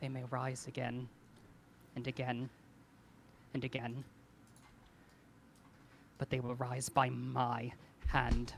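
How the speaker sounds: murmured, hushed, quiet, solemn tone. Narrating a game, the speaker voices Kothar in a hushed voice. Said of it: "he says in a hushed voice".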